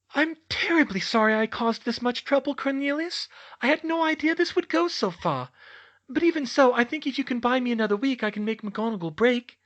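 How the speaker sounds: very high, syrupy, honeyed, sugary sweet voice. Reading a story, Dolores apologizing to Cornelius: sweetest voice. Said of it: "In her sweetest voice".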